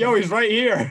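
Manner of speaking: loud, high-pitched mocking call.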